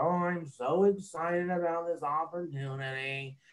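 slow, soft, low-energy voice with zero enthusiasm. Speaker giving an example of sounding like Eeyore, Eeyore voice. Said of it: "do you sound like Eeyore?".

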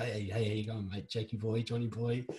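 put-on cheeky, teasing, matey tone. Retelling how the club captain greeted people: imitating a cheeky mocking greeting. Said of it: "you're kind of taking the piss out of".

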